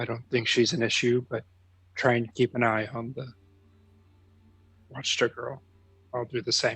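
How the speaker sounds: whispering in a put-on voice. Walking through town, leaning over to a companion to whisper in character: whispering in character.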